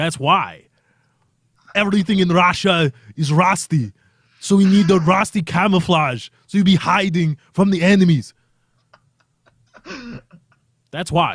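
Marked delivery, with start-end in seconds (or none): 0.0-8.3 put-on Austrian accent laid over speech. Speaker explains something in an Arnold Schwarzenegger impression. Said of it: "Arnold Schwarzenegger explaining".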